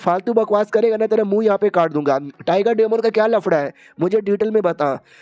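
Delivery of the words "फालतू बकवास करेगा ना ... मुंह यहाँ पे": ordinary delivery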